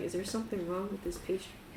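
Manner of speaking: acted whispering. Speaker acting out what a man whispered to them, retelling a whisper. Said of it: "he whispers to you".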